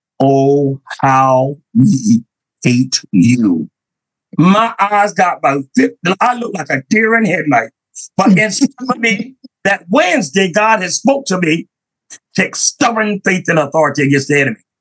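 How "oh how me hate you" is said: very low, deep possessed-demon male voice. Preacher retelling what a demon said through a teenage kid, deep male voice. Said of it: "in a deep male voice".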